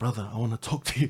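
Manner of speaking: whispered speech. Retelling hugging a man in greeting, re-enacting whispering in his ear. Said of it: "I'm whispering in his ear".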